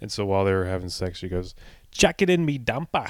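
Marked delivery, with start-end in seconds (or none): 1.9-3.1 put-on casual Australian accent with raised pitch. Retelling someone's story, quoting what an australian girl said: australian accent impression. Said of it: "an Australian girl".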